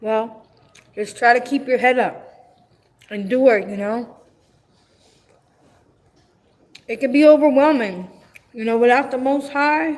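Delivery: speaking with mouth full, chewing. Encouraging a listener while eating, talking while eating. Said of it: "I'm sorry, I'm eating. If you can hear me chew".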